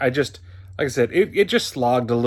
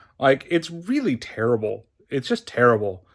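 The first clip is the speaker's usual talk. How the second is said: normal talking voice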